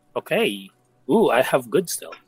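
ordinary delivery

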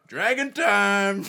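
high, drawn-out, roaring shout.

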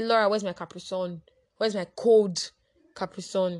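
loud, as aggressive as possible.

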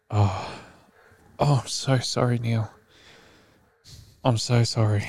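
put-on sad, apologetic customer-service voice, soft and slow. Retelling a phone call where the worker could not help: imitating a sad call center worker. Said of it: "all fucking proper sad".

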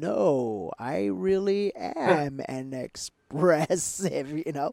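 very slow, flat, soft, insistent monotone. Retelling how Jason argued back with him, imitating Jason's very slow speech. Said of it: "his tonality and his rate of speech is just very slow like this".

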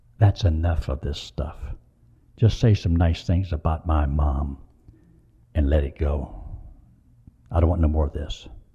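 confidential stage whisper. Retelling what a son said onstage during the gospel: imitating someone whispering. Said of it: "and whispers in my ear".

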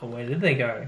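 ordinary talk, nothing marked

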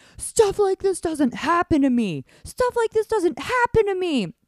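yelling, pitched very high. Retelling how her partner reacted after the emergency: imitating him yelling. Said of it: "he just starts yelling".

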